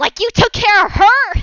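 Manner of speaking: very high, shrill, full-volume scream and shout. Narrating the scene, the storyteller voices a character's outburst, shouting. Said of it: "as he shouts".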